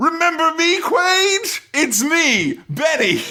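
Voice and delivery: very high, eager, thrilled, drawn-out sing-song. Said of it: "his best line here is he goes".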